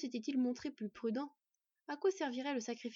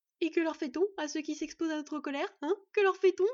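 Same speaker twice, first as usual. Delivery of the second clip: very loud, shrill hysterical outburst; 5 semitones higher, 9 dB louder than usual. The first of three voices speaks again, hysterical. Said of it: "avec des accents hystériques".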